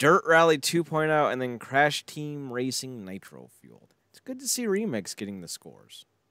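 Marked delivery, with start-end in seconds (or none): 4.1-6.0 sarcastic, swooping sing-song, meaning the opposite. Commenting on a list of game award winners: sarcastic. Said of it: "I'm being sarcastic".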